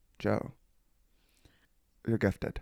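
rough, low, creaky voice. Retelling what his mom said about his drawing, imitating a mother. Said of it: "Your impression of her is".

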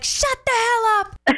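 mock very high, dragged-out, drawn-out shout. Retelling a road trip when a caller yelled at everybody: imitating someone yelling. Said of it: "Why were you yelling?".

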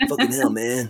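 put-on assumed generic American accent. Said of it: "generic American".

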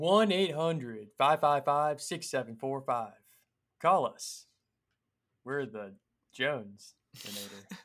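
crisply enunciated announcer voice, radio commercial style. Asked to talk like giving a commercial into the mic, in a commercial voice. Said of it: "Talk like you're trying to give us a commercial right now".

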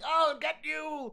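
high, slow, loud shout. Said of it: "and they're shouting".

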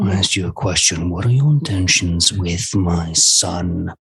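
very low, deep, pressing growl. Playing a character jolting the player's head from behind mid-battle, very low growl. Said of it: "he says in a very low growl".

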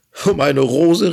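crying out together. Narrator reading a tale, voicing the creatures as they are crying out. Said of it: "riefen sie".

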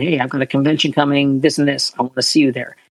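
ordinary talk, nothing marked

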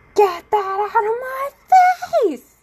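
shrill, very high, loud, sudden flipped-out yell. Speaker acts out snapping at him after the same bit repeated several times: retelling a yell. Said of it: "start yelling and being like".

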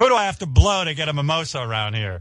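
high, demanding reality-star voice. Joking about Colton on Bachelor in Paradise: imitating Colton. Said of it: "It's me, Colton".

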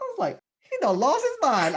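stunned disbelief, drawn out, high and loud.

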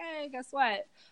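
high, mock ironic, put-on sunny cheerfulness. Joking that a frightening diagnosis is now a fun party story: mock cheerful. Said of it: "it's my fun par-, party story".

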